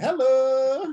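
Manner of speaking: put-on Cajun accent, "hello" high and drawn out. Imitating how Ed Orgeron said hello: Ed Orgeron saying hello in Cajun. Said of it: "He said hello in Cajun".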